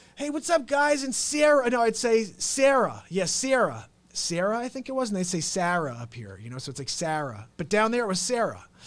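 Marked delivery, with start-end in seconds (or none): 0.2-1.1 high-pitched put-on New Jersey accent. Retelling asking new classmates to play baseball: imitating own past new jersey accent. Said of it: "I grew up in New Jersey".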